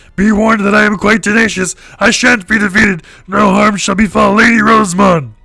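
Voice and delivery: very high, very loud, shrill, booming put-on bug voice. Voicing a bug character blocking the way in a game: put-on bug character voice. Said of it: "when I would do that voice every time one of the bugs talked".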